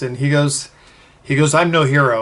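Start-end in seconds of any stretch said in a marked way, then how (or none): 1.5-2.2 put-on very serious tone. Retelling what a congressman said on meeting him: imitating a very serious tone. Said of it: "in that very serious".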